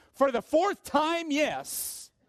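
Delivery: high, annoyed yell at the top of the lungs. Telling the joke's punchline, the wife answering her husband: imitating an irritated shout. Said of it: "answered at the top of her lungs".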